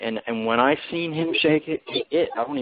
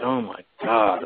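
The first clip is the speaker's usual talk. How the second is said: put-on crying, spoken through tears; 4 semitones lower than usual. Retelling own words in a dream: retelling own crying. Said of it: "and I just started crying".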